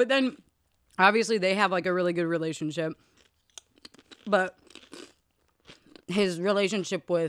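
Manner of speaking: speaking through food, mouth full. Speaker keeps talking while chewing food. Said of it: "I don't know why I'm chewing and talking".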